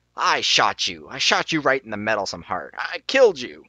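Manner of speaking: sudden growled snarl of disbelief. In the story, the archer growls at the newly arrived knight, snarling and jumping an octave. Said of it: "snarling voice suddenly jumping an octave".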